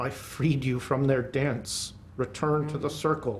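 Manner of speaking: low, hushed half-whisper, very close. Game master voices a character half-whispering to the player in english: half-whispering. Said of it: "he whispers to you".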